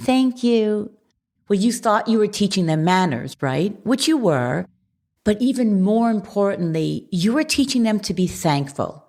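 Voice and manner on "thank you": mock, sweetest little child voice. Describing children prompted after getting a juice box: imitating a child's sweetest voice. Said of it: "And in the sweetest voice".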